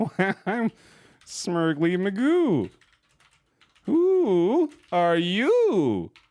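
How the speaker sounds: showy, excited, very slow, high, stretched-out voice. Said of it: "and exclaim".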